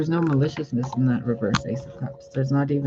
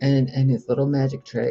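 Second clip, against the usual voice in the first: ordinary talk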